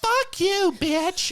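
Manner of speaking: high, shrill screaming at full volume. Retelling two women fighting in a crowd: imitating someone screaming. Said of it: "screaming at each other".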